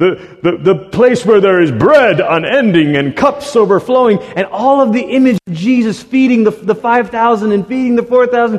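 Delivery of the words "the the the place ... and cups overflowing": rough, gruff voice throughout. Quoting an Old Testament scholar on the coming feast: gruff Walter Brueggemann voice. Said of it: "in his gruff, you know, Brueggemann voice".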